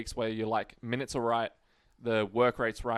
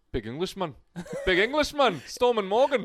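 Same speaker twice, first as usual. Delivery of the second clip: swooping, very high, loud put-on Irish accent; 9 semitones higher, 5 dB louder than usual. Asked about Morgan Smithies, answering in a put-on Irish accent. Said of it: "Why are you doing an Irish accent then?".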